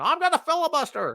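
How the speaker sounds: badly done very high pitch. Joking about staying on all day to filibuster: poor Jimmy Stewart impression. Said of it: "That's my really poor Jimmy Stewart impression".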